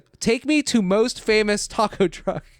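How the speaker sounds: put-on high, insistent, demanding yelling, repeated. Retelling what a woman kept yelling at a streamer in his car, retelling a yell. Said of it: "She just keeps yelling that at him".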